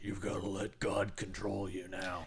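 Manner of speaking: soft, gravelly preacher voice, quietly growled. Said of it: "grovelly being like".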